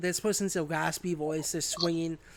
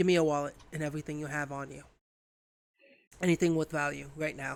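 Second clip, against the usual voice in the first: rasping, raspy, rushed delivery. A stranger in a coat points a knife at the player's character, in a raspy voice. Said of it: "in a raspy voice".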